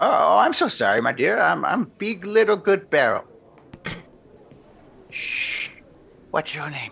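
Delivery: put-on acted sloppy drunk whisper. Playing a drunk character greeting a stranger: acting sloppy drunk, stage whispering. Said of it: "Sloppy drunk stage whispering".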